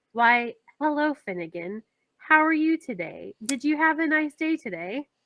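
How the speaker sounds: very calm, soft, gentle voice. Crouching down to greet an animal, a player speaks very calmly. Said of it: "I'm going to very calmly say".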